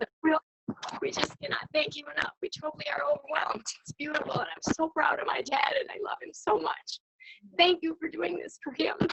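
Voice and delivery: overcome, hushed, breathy emotional near-whisper. Thanking people for honoring Dad with a coin: very emotional. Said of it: "we're just very emotional right now".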